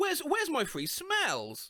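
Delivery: baffled, stammering. Retelling a drive-thru customer asking about her order: imitating a confused customer. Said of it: "looks up all confused and asks".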